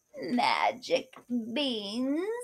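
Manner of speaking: soft, creaking beggar voice. A narrator reads the beggar's line to Kate, in a creaky voice. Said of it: "the beggar said in a creaky voice".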